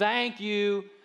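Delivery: play-acted dutiful, flat, utterly unconvinced delivery. Acting out how they say thank you: imitating a flat, unconvinced thanks. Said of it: "they say it with like the least conviction".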